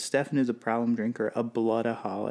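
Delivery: normal talking voice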